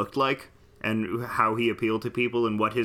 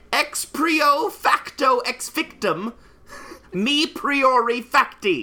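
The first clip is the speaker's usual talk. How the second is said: put-on very high, slow, carefully enunciated voice; 5 dB louder than usual. Doing mock-Latin words as the Pope: put-on papal voice, enunciated. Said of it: "Listen to the way that I enunciate these words as the Pope".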